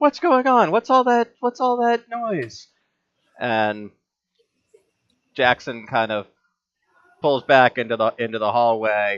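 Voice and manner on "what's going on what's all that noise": screaming voice, much higher pitch. Narrating a scene, voicing the innkeeper heard amid commotion downstairs; innkeeper screaming. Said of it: "you hear the innkeeper screaming".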